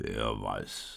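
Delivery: very low, deep, rumbling grumbling voice. The cow answers the sheep in the stable, grumbling. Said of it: "brummte die Kuh".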